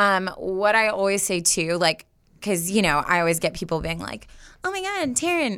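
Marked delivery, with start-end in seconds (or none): 4.6-5.6 nasally voice, pitched very high. Imitating people who talk to her: imitating people, nasal voice. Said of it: "Just got some nasally so bad".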